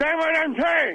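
put-on Cuban accent. Showing off an accent to the others, speaking in a cuban accent. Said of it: "That's my Cuban accent".

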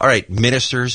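ordinary talk

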